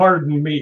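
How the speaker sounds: put-on angry voice. Retelling a voice heard close behind on a dark path: imitating someone sounding mad. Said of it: "like he was mad".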